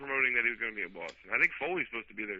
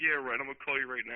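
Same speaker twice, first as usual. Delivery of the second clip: ordinary talk, nothing marked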